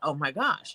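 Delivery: mock eager, thrilled, excited burst of delight. Retelling a phone call where mom was thrilled: imitating excited mom. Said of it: "She was so excited".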